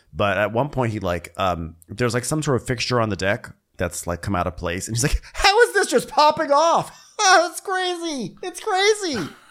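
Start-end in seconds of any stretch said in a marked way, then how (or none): 5.4-9.3 very high, drawn-out, wide-eyed overexcited gush, acted out. Retelling Wes reacting to a deck fixture popping off: imitating Wes, way too excited. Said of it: "You're way too excited".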